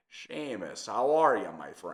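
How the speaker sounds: gravelly, intimidating Irish accent, mob boss style. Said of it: "a little more gravel".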